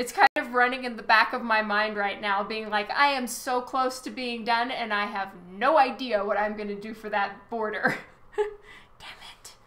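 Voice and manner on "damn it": hushed whisper under the breath. Stuck on what to do for a border while drawing, muttered under breath. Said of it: "I said that under my breath".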